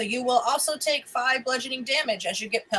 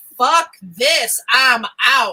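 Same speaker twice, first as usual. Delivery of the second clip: very loud, unhurried, drawn-out shout; 9 dB louder than usual. Narrator voicing a brigand who drops his bow and runs, very loud shout. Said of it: "you hear him very loudly say".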